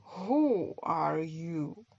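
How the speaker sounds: drowsy, slow, unhurried sleepy drawl. Reading a story aloud, the Caterpillar questions Alice in a slow, sleepy Caterpillar voice. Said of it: "in a slow, sleepy voice".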